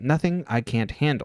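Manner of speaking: ordinary talk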